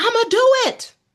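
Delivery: very high, loud, startled shout. Recounting waking abruptly from a dream, speaker re-enacts what she yelled: retelling a yell. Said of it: "and I'm yelling".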